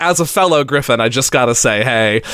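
ordinary delivery

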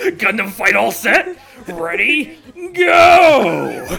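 mock very slow, loud, stretched announcer-style yell. Imitating the show's announcer calling the fight: yelling like the show's announcer. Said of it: "I just wanna yell".

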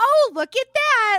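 very high, very loud, shrill, cheerful hyped announcer voice. Describing a game trailer's announcer voice, imitating it: super high energy announcer. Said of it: "really up here and super high energy".

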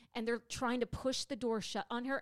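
ordinary delivery

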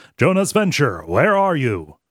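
robot-like voice. Recapping an episode, quoting councilman Vendetta's line in Vendetta's robot voice. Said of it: "speaking in the robot voice".

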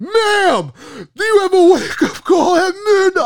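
put-on, shrill, very high, loud screaming. Retelling waking an old couple beside their bed: retelling a scream.

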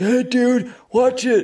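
very high, obnoxious dumb American jock voice. Describing americans behaving badly in movies, acting one out: dumb american jock voice. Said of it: "Americans behaving badly".

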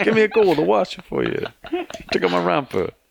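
squeaky, very high, put-on Brooklyn man's accent. Picturing the least likely accent in a romper, the speaker does a brooklyn guy accent. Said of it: "It's like Brooklyn guy".

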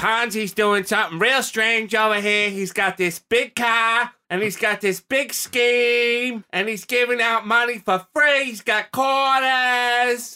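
put-on heavy Boston accent, pitched way up. Telling a story about a Boston newspaper's report, the speaker puts on a Boston accent. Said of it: "Straight up Bostonian accent".

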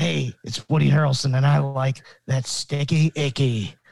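raspy character voice throughout. Doing an impression of Woody Harrelson for the others: raspy Woody Harrelson voice. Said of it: "Why does he have such a raspy voice?".

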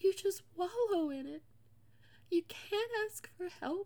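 weeping voice. Describing what depression feels like, crying. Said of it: "I'm sorry for all the crying".

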